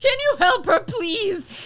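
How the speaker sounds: piercing, very high, very loud cry. Calling down from a balcony to people below: shouting for help.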